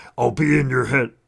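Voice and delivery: strange, eerie, unearthly, otherworldly voice. Telling his wife what happened, the speaker imitates the voice he heard. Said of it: "I did the voice for her and I go, and it sounded like this".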